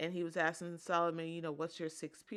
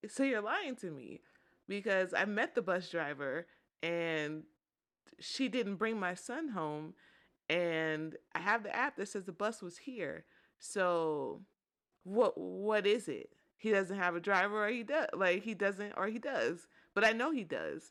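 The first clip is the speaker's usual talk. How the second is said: ordinary talk, nothing marked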